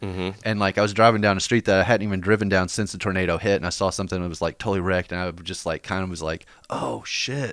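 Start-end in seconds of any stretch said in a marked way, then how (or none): 6.7-7.5 put-on mutter under the breath, higher, quieter. Retelling seeing tornado damage while driving, muttering under the breath. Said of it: "Like just kind of said that under my breath".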